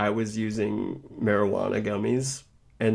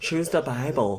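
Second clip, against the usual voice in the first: put-on grandma voice, pitched higher; 5 semitones higher than usual. Saying they don't want to be like a certain grandma, the speaker is imitating a grandma. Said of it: "the grandma that's like".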